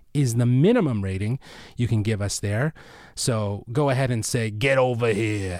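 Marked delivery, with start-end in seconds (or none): 4.5-5.6 New Jersey accent. Podcast host closing an episode asks listeners for a rating: jersey accent. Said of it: "that was my Jersey accent version of that".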